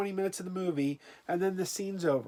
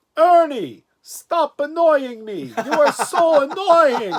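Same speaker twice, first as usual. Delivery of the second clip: shrill, very loud, belted high puppet voice; 7 semitones higher, 9 dB louder than usual. Retelling someone's impressions; asked next to do Bert, giving a Bert impression. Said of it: "now do Bert," and he's like".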